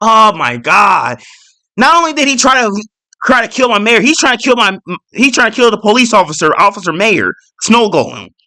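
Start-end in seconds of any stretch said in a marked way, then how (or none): 0.0-1.2 mock annoyed, angry, pissed-off outburst. Retelling own reaction to a trapped snow golem: retelling being pissed off. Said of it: "I was pissed off too".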